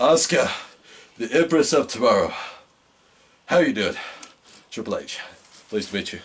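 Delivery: mock polite, stiff, formal tone. Retelling a wrestler greeting a champion as if never met: imitating a stiff first greeting. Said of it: "sounded like he had never met her".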